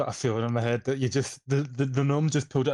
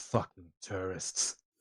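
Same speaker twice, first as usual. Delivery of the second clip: whispered, muttered mumble under the breath; 5 semitones lower, 9 dB quieter than usual. Voicing Trench as he walks away, Trench mumbling under breath. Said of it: "just mumbles".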